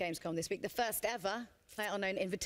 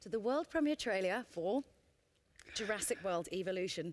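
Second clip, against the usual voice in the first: careful, excited, word-by-word delivery. Announcing a world premiere trailer while excited, said slowly. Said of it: "I'm just going to say this slowly because I'm a little bit excited".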